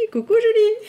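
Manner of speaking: ear-splitting, high, loud squeal.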